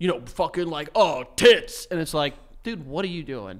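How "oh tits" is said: mock hyper bro voice. Mocking people who act like a hyper bro: imitating a hyper stereotypical bro. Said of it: "hyper stereotypical, like, bro".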